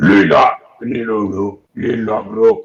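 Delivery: very loud, very slow creature voice. Voicing a Grung who stands above the players: Grung character voice. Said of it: "He goes".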